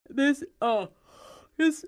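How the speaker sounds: talking through a yawn. On a call, asking to speak to a supervisor, yawning while talking. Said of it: "stop yawning".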